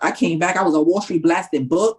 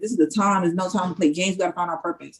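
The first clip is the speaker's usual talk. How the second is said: plain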